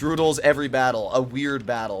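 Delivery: ordinary talk, nothing marked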